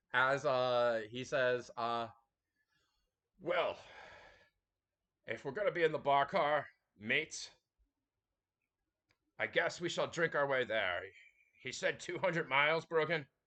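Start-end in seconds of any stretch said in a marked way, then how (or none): 3.5-13.3 put-on Scottish accent. Voicing the character Argyle in a Scottish accent: Sean Connery Scottish accent. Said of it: "in his Scottish accent, just like Sean Connery".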